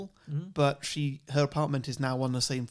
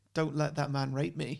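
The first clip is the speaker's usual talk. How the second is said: put-on pleading, begging voice. Retelling a film scene where the character begs: imitating pleading.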